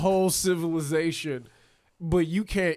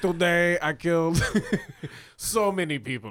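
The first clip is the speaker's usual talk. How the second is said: put-on Cuban accent. Joking about Nazi diaries with friends, reading an imagined entry in a Cuban accent. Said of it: "Why are you making him sound Cuban?".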